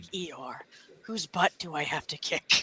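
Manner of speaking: robotic leader character voice. Retelling someone's Eeyore and Optimus bit, answering Eeyore in Optimus voice. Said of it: "he has his Optimus voice".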